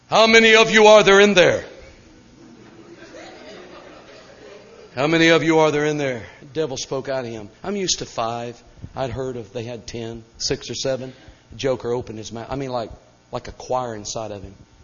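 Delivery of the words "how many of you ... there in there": loud, high booming preacher pulpit voice. Retelling casting out devils, questioning the possessed man in God-ordained preacher voice. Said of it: "I kicked in my Assembly God ordained voice".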